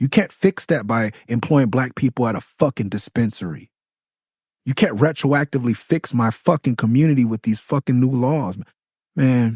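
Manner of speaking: boiling-over anger. Mid-rant, the speaker catches himself getting angry. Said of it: "I'm sorry, I'm getting angry".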